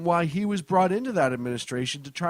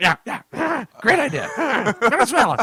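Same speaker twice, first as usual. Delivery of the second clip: put-on high, loud cartoon teenager voice; 7 semitones higher, 6 dB louder than usual. Imitating Obama as Beavis agreeing to the plan: Obama as Beavis. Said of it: "And Obama".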